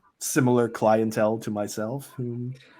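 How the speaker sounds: ordinary talk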